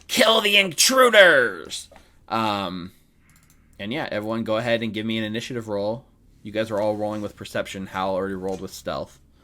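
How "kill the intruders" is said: very high, shrill little kobold battle cry. Voicing a regal kobold who orders an attack: kobold yelling in mishmash Common. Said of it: "in, like, kobold common mishmash, it yells".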